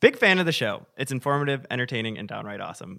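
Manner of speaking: ordinary delivery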